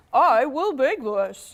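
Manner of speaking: put-on dog voice, spoken slowly. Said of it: "That's my lucky dog voice".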